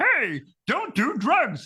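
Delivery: pitched very high, dragged out. Retelling an old anti-drug cartoon, Kermit the Frog voice. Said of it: "where Kermit the Frog's like".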